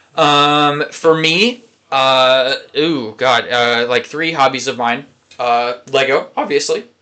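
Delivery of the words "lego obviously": voice breaking on the word obviously. Listing his hobbies to a co-speaker, his voice cracking. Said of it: "fucking voice crack, bro".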